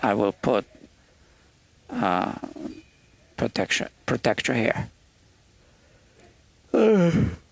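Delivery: speaking while yawning, mid-yawn. Player demonstrating on a fretboard to his audience, talking while yawning. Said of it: "sorry, I'm yawning".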